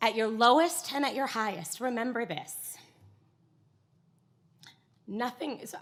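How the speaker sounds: choked-up, emotional voice catching. Quoting a woman's words to the group, the speaker starts getting emotional. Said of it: "I'm getting emotional".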